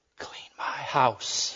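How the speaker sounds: very soft, close, hushed whisper, barely there. Reading a joke aloud, the woman's reply to the man: whispering. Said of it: "looked deep into his eyes and whispered".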